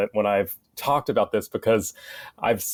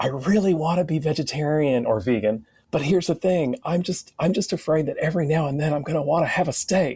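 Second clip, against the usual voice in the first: mock conspiratorial whisper, higher; 6 semitones higher than usual. The speaker retells what people at signings confided, retelling a conspiratorial whisper. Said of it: "drop their voice down to this conspiratorial whisper".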